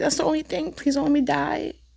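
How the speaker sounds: mock crying plea. Retelling begging hospital staff after being asked for questions: retelling a crying plea. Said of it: "crying and being like".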